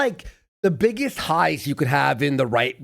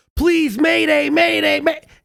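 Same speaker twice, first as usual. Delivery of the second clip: very high, raised, desperate panicked cry; 11 semitones higher, 5 dB louder than usual. Comparing someone to a person losing oxygen on a submarine: mock panicked call for help. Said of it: "calling for help".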